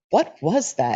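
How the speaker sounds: irritated, short-tempered, really annoyed snap. Retelling how he snapped at her, imitating an annoyed snap. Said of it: "in this really annoyed tone".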